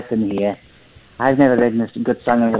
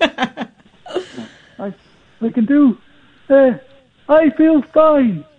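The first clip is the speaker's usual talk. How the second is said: put-on young Liverpool voice, pitched higher. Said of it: "That's young [name]".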